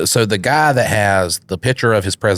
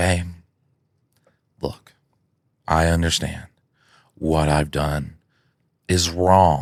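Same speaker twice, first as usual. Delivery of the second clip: very slow, deliberate delivery, each word laid out; 2 semitones lower, 4 dB quieter than usual. Retelling a skit where a husband answers his wife, imitating very slow speech. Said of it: "he's speaking real slowly".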